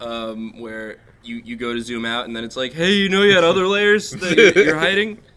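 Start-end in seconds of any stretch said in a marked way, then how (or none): 2.7-5.1 mock very loud, eager, excited, high voice. Showing how the software talks when zooming out: excited Photoshop voice. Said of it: "that's how I imagine Photoshop talks".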